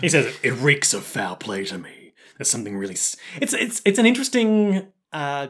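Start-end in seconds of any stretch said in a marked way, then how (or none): 0.4-3.2 very low, deep, dead-serious solemn delivery. Retelling a scene, voicing Ryuhei as he looks super serious: imitating Ryuhei's serious voice. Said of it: "He looks super serious and he's like".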